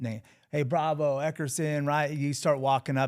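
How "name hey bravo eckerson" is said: put-on cop voice, yelling. Describing being called up at the county, imitating a cop yelling names. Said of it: "he'll start yelling".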